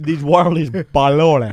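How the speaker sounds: polluted pronounced in film gangster style. Showing how Scarface says pollution: Scarface voice. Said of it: "That's how Scarface says pollution".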